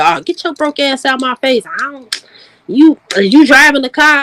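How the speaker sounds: jazzy, dismissive woman's voice, brushing off. Acting out a woman turning down a man: imitating a jazzy woman's put-down. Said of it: "you one of them jazzy female".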